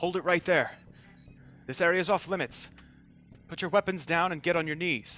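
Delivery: faintly mechanical, forceful voice. Narrator voicing armed figures calling out to the players, slightly mechanical voice. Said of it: "call out in a slightly mechanical voice".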